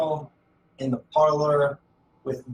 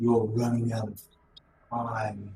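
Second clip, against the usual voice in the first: deep, dark, shadowy voice, dropped low; 4 semitones lower, 4 dB quieter than usual. A voice from the magical darkness in the corner questions him, deep, dark voice. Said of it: "you can hear a deep, dark voice".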